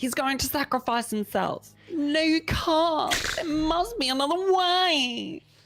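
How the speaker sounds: put-on very high Cockney accent, way drawn out. Acting out a movie scene with friends, in a cockney british accent. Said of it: "really do that British, Cockney British".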